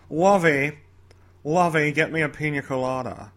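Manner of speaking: slow, unhurried, drawn-out character drawl. Slipping into a voice before handing over to a co-host: the guy from Gilligan's Island. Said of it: "I sound like the guy from Gilligan's Island".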